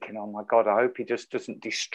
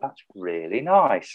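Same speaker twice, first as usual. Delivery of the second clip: gentle, soft-spoken, very soft, hushed voice. Retelling how he praised the guitar: imitating a very soft voice. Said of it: "Dead soft voice".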